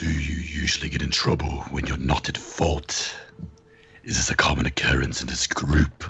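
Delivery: soft, quiet whispered delivery. Leaning over to another character and asking about trouble: whispering in character. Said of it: "and whispers".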